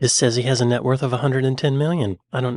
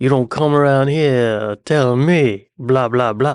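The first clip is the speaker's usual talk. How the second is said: put-on Louisiana accent; 6 dB louder than usual. Pitching paid accent lessons, then showing off a Louisiana accent. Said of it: "This is my Louisiana accent".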